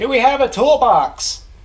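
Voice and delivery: shrill, very loud, high yelling. Asking the crew about a toolbox over the radio: yelling. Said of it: "I don't know why you're yelling".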